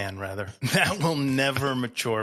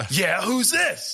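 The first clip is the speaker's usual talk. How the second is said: annoyed, put-out, pitched-up delivery; 10 semitones higher, 3 dB louder than usual. Retelling how Steve answered when the listener called his name, imitating Steve pissed off. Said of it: "he's like all pissed off".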